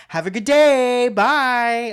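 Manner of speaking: very loud, very slow, drawn-out, falsely polite tone. Showing how a cashier talks to a rude customer: imitating a fake-nice cashier. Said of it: "the cashier's like".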